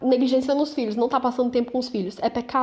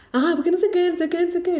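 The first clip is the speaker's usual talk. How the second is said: shrill, screechy, high parrot-like voice; 6 semitones higher than usual. Showing how her voice gets when talking: shrill parrot-like voice. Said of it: "Falando bem gasguita mesmo".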